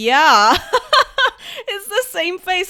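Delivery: loud, high, delighted laughing.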